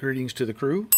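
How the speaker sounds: ordinary talk, nothing marked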